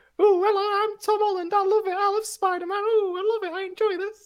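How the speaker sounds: very high voice. Asked to do the impression again, doing a higher-pitched Tom Holland impression. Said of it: "It's just me, higher pitched".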